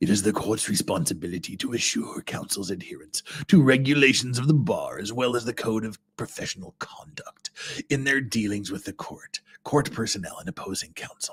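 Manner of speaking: soft, menacing, sinister voice. Reading aloud a judge's order from a trial transcript, in a sinister voice. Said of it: "we need to give him a sinister voice".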